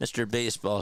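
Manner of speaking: ordinary talk, nothing marked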